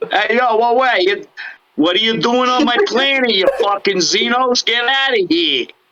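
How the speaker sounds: very high-pitched put-on New York accent. Speakers imagine them as New Yorkers instead of Texans, New York accent. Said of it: "We're New Yorkers. That would be good too".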